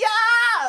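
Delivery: very high, stretched-out, drawn-out yell on yes. A podcast co-host shows how she would answer in a debate, yelling. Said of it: "because I want to yell".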